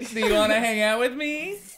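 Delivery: very high, loud cartoon voice. Playing a cartoon character asking a neighbor to hang out: SpongeBob voice. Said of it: "I'm SpongeBob".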